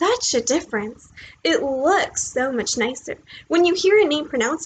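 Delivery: ordinary delivery, nothing marked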